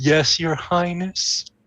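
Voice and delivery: sleepy, dozy, half-awake voice. Voicing a character looking up when called: drowsy. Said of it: "drowsily look up and be like".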